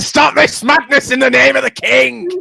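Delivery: very high, rasping, kingly shout. Challenging Scott to shout the line, shouting in a Bobby B voice. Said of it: "in your best Bobby B voice to shout".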